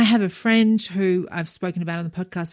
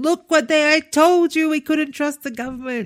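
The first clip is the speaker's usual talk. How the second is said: mock, frustrated, exasperated, mild yelled rant; 8 semitones higher than usual. Retelling what was screamed across the apartment to the husband: retelling own scream. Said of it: "I'm screaming across the apartment to my husband".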